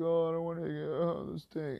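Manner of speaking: put-on loud, high, sobbing, whiny child's crying. A teacher retells a student who won't listen in class, imitating the kid crying. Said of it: "all crying like a little bitch".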